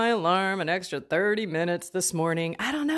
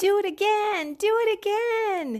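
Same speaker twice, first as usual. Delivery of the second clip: put-on very high-pitched small child's voice; 13 semitones higher than usual. Quoting kids who ask to be pushed on the swing again, in a little kid's voice. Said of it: "that little voice from little kids".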